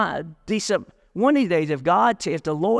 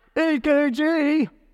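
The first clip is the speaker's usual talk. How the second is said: mocking sarcastic tone, pitched higher; 9 semitones higher than usual. Repeating a listener's called-out answer, imitating a sarcastic reply. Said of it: "how can you say three letters that sarcastic?".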